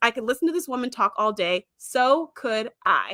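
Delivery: normal talking voice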